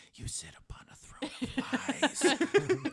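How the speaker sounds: loud, carrying stage whisper. Voicing a character who sneaks behind a traitor: whispering. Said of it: "And she whispers bet-, behind you".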